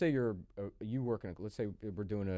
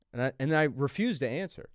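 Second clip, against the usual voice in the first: ordinary talk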